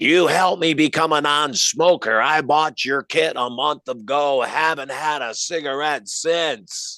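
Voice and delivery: slow, drawn-out speech with no larynx. Retelling what a woman said to the speaker, imitating a voice without a larynx. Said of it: "she's talking like this. She's lost her larynx".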